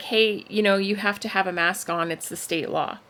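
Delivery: ordinary delivery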